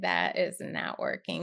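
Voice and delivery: ordinary talk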